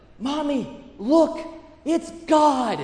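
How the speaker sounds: put-on high, childlike, loud stage whisper. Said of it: "he whispers as loudly as he can".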